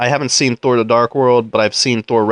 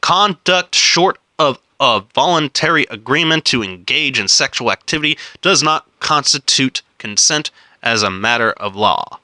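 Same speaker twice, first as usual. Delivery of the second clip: slow, careful, deliberate, unhurried reading aloud; 2 semitones higher than usual. After stumbling on a passage, starting over and reading slowly. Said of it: "I'm gonna read it slow".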